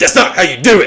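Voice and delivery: mock high-pitched parent yelling. Retelling telling a daughter in a bathroom stall: imitating own yelling. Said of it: "I'm just, like, yelling at her".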